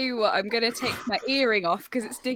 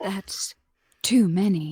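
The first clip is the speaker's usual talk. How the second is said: put-on, formal, deep newsreader voice; 4 semitones lower, 4 dB louder than usual. Repeating a line when asked to: BBC Radio 4 news presenter voice. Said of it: "a B B C Radio four news presenter?".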